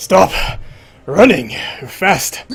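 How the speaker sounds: breathless, high shout between pants. Voicing a character who grabs a fleeing player: NPC panting while shouting. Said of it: "And he's panting, like".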